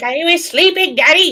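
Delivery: high pet voice. Voicing the pet that was just woken up: voicing the woken-up pet. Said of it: "He's like".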